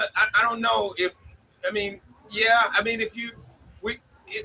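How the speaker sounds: very high stuttering with halting false starts. Asked whether the team is performing as envisioned, answering while stuttering, halting. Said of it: "I'm sorry to be stuttering".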